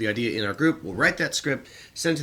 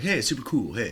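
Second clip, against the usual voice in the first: put-on cool computer voice, lower; 3 semitones lower than usual. Describing an ad parody where the computer gets a new processor: Hal's new cool voice. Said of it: "he's got a different voice".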